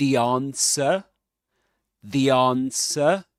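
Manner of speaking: British pronunciation, non-rhotic, no final R. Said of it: "Without pronouncing the final R".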